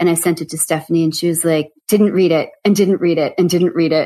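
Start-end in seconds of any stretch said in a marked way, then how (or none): none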